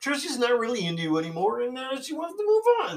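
voice pitched way up like a puppet. Demonstrating a breakup message delivered on someone's behalf, in a Kermit the Frog voice. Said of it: "I'll do it as Kermit the Frog".

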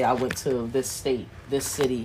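plain

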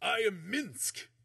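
loud high large-man voice. Voicing Minsc, a large man, introducing himself: Minsc's voice. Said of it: "the large man goes".

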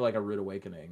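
ordinary delivery

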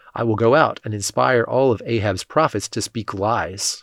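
plain reading voice

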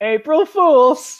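very high, dim-witted, dumb-sounding voice. Podcast host announcing an April Fools' episode, in a dumb-sounding voice. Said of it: "you sounded so dumb right there".

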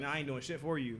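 ordinary talk, nothing marked

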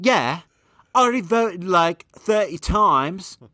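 put-on British accent, pitched high. Trying James's reply again after being praised for the impression, as a British James impression. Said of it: "You're becoming more British".

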